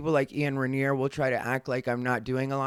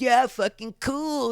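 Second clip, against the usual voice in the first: high, passive-aggressive, try-hard fake-cool dad voice; 10 semitones higher than usual. Speaker mimics a man being passive aggressive toward them, mocking a try-hard cool dad. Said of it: "like that ridiculous dad shit".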